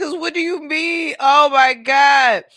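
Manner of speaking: high, loud laughing, cracking up to tears. Reacting to the kids' coffee order, in tears. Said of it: "I'm over here in tears".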